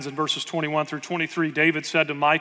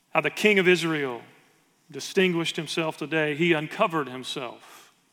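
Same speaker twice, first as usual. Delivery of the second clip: ordinary talk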